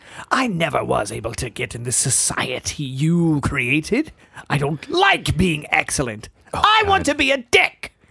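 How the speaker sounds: animated character voice with pitch swooping wildly. Playing along in a group bit, in Joker voice. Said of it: "you're doing the Joker voice".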